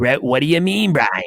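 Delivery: put-on Maine accent. Retelling his coach's reply to his apology: imitating coach's Maine accent. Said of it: "he talks in that that Maine accent".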